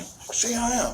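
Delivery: put-on shrill weeping, very high, crying, pleading. Retelling a son's words during a standoff, imitating someone crying. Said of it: "but he's, like, crying".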